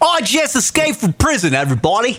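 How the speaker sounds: put-on British accent. Asked to do it British, playing an escaped prisoner: put-on British accent. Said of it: "Do it British".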